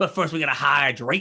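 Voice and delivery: broad put-on Cajun accent, laid on thick. Retelling a cook's catchphrase: imitating a Cajun cook's thick accent. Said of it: "he's got this really thick accent".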